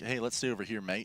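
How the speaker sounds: casual put-on Australian accent attempt. Imagining what the Renegades players say, in a put-on Australian accent. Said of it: "It's a good attempt at an Australian accent".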